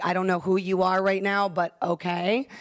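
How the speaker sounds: usual speaking voice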